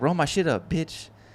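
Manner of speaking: rough, bossy, aggressive tone. Retelling what a pimp said to two girls: imitating an aggressive order. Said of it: "he's getting aggressive".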